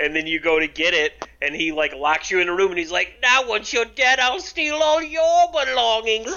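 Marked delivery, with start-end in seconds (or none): 3.2-6.3 very high, squeaky, sneaky scheming rat voice. Speaker retelling a character who locks you in a room, in a rat-like voice. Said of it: "sounds like a fucking rat".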